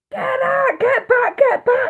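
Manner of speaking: mock, very high, drawn-out screamed voice. Retelling a tornado hitting the hotel, imitating screaming at the kids. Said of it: "screaming at the kids".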